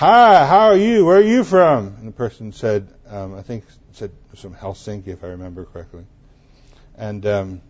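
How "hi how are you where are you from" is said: high, very loud, obnoxious voice. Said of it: "very loud, very obnoxious voice say".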